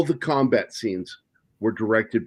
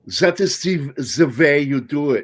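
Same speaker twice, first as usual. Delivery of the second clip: slow, bad, fake German accent; 4 semitones higher, 4 dB louder than usual. Speaker mocks someone doing accents, imitating them in a bad fake German accent. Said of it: "doing a G fake German accent going".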